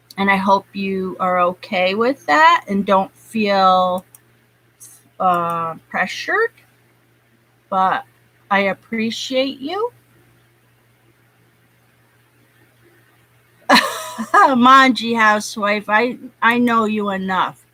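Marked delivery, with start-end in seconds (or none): 7.7-17.5 speaking through tears, crying. Thanking a viewer for support while making them a moderator, crying while talking. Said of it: "excuse me, I'm crying".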